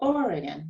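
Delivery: Oregon, first syllable stressed. Pronunciation lesson on three-syllable oregon, with stress on its first syllable. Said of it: "it's the first syllable that is higher and longer, that is stressed".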